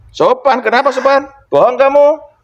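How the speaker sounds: scornful, contemptuous voice.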